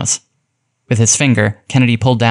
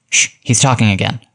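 plain

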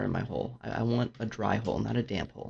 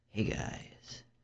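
deep ASMR voice, much quieter; 8 dB quieter than usual. Switching back to their recording voice to greet viewers, deep ASMR voice. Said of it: "Got my deep ASMR voice".

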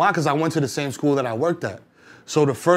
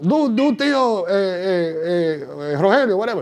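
put-on drunk voice, higher pitch; 5 semitones higher than usual. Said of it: "I would do an impression of my uncle drunk".

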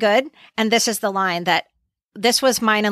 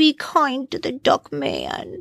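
put-on babyish, very slow, swooping, drawn-out sing-song voice; 4 semitones higher than usual. Retelling a moment where she grabs Andy's face: baby voice. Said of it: "she says it in a baby voice".

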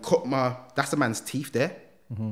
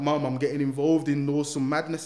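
mock speaking through tears, crying voice; 3 semitones higher than usual. Retelling own words to mum at her front door: imitating own past crying. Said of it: "And I'm crying".

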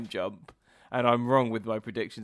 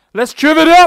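shrill, booming, very enthusiastic, eager, high and loud; 21 dB louder than usual. Answering a question about starting the trivia: very enthusiastic. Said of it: "That was a very enthusiastic one".

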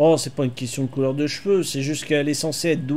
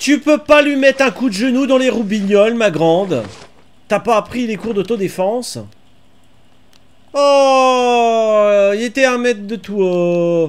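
high, loud, worked-up exasperated scolding. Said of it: "mais je m'énerve".

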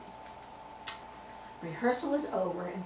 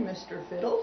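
plain

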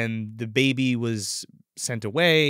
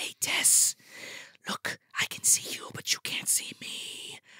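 very slow, hushed, breathy whisper. Acting out a killer in the dark holding a flashlight, whispered. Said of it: "they're whispering like this".

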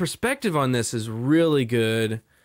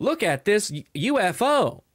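mocking put-on robotic text-to-speech voice; 7 semitones higher than usual. Mocking UFO videos on TikTok that use a narrator voice: imitating a robot voice. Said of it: "with the robot voice".

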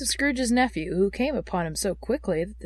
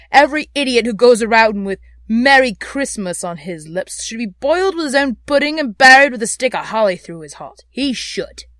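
with indignation; 3 semitones higher, 11 dB louder than usual. Scrooge answers his nephew; indignant. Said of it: "said Scrooge indignantly".

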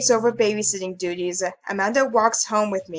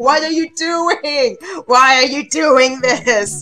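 put-on screaming; 4 semitones higher, 8 dB louder than usual. Imagining the conscience inside Tomo Dad yelling at him: acting out a conscience screaming. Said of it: "just screaming at him like".

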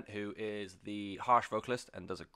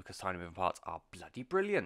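accidental slip into sing-song Welsh accent; 2 semitones lower than usual. Recommending a band's new album, in an accidental welsh accent. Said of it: "I don't know why I sounded Welsh then".

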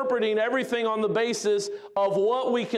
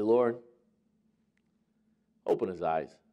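mock, perfectly collected and untroubled calm delivery; 4 dB quieter than usual. Retelling a Bible story, voicing Elisha praying for the servant: imitating calm Elisha. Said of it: "calm as b-, can be".

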